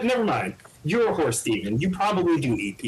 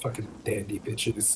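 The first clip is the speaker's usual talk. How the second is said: quiet whispered murmur under the breath; 6 semitones lower, 9 dB quieter than usual. Speaking as Glint while walking to the table: murmuring to himself in character. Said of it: "Glint murmurs to himself".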